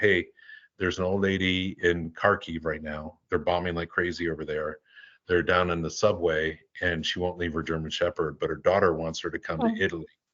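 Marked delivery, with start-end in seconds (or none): none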